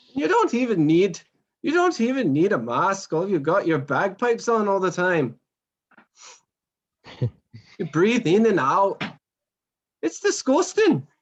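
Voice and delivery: teasing put-on Irish accent, high, swooping. In an acted back-and-forth between two sides, speak in an Irish accent. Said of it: "and I'll be Irish".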